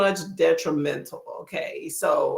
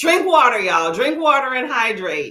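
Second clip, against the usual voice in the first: down-home country accent; 4 semitones higher, 4 dB louder than usual. A speaker from Texas addressing viewers, slipping into a country accent. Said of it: "I'm getting my country accent".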